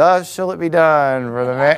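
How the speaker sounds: mock unenthusiastic, low reading. Describing how a narrator reads Haman's proclamation: imitating Alexander Scorby, half-hearted. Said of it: "he kind of reads it in a half-hearted voice".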